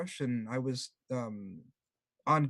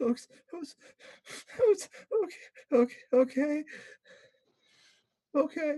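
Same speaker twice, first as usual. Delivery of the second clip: very high, choked-back, stifled sobbing; 12 semitones higher than usual. Retelling how a noisy man reacted when told to be quiet, imitating stifled sobbing. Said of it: "stifles his sobbing and he's like".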